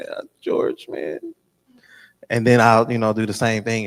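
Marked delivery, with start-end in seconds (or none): 0.0-1.2 sobbing, tearful, crying voice. Retelling phone calls after preaching moments: imitating own crying. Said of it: "I'll just be on the phone crying like".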